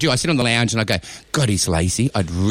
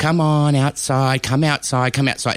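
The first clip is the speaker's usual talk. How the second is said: mock sweet, nice coaxing voice; 3 semitones higher than usual. Showing how they call their dogs to go outside, in a nice coaxing voice. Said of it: "because I go nicely".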